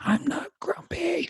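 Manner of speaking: put-on, very high, full-blown angry toddler tantrum. Retelling a two-year-old throwing a fit when called grumpy. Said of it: "Full blown, like, fit".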